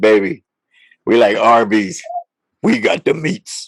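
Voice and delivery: low, put-on sexy, seductive come-on voice. Acting out the listener leaning over to say this, in a mock sexy voice. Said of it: "with that sexy voice and say".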